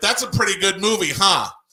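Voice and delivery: shouting loudly. Retelling confronting a man in a video store, shouting loudly. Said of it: "I'm probably shouting really loud at the microphone".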